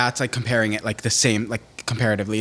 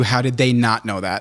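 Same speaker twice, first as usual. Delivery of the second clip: normal talking voice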